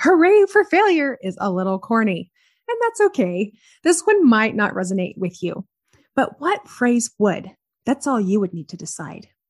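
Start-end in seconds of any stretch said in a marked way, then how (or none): 0.0-1.2 high, loud, celebratory cheering yell. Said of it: "would think yelling".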